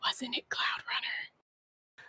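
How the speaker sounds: hushed whisper. Rocky leans over to Pebble and asks about the name, whispering. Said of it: "just gonna whisper to Pebble and be like".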